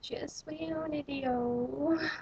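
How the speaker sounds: put-on high, slow, drawn-out, terrible French accent. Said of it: "in the worst French accent ever invented".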